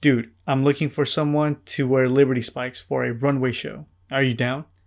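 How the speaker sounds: ordinary talk, nothing marked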